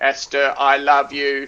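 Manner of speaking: slow, level, flat robotic monotone. Showing how a love declaration without tone movement isn't compelling: flat robotic monotone. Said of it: "robots speaking in the same voice".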